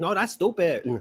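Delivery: put-on Latin American accent.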